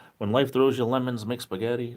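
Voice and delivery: ordinary talk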